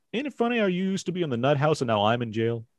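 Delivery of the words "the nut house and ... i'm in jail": ordinary talk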